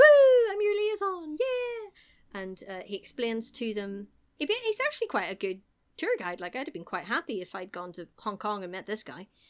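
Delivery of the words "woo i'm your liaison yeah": mock shrill, booming, drawn-out, very high and loud excited whoop. Retelling how the liaison greets the fighters: imitating an excited liaison. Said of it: "he's very excited about it all".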